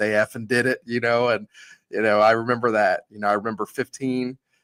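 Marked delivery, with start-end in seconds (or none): none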